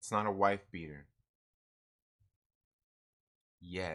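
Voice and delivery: low, hushed, kept-down talking. Muttering a line not meant to be said out loud: talking low. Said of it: "You notice how I'm talking all low?".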